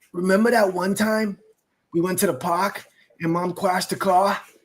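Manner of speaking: put-on child's strange accent with heavy r's. Parent retelling what their three-year-old daughter said, imitating her odd accent. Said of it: "why do you sound like you're from like?".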